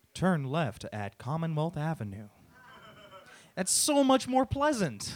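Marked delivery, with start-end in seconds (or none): 0.1-2.2 smooth, calm automated navigation announcement voice. A rider contrasting the screaming fairy with the GPS: imitating a GPS voice. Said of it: "You know what the GPS sounds like?".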